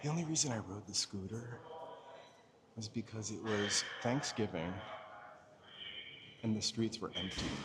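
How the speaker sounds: soft, hushed library whisper.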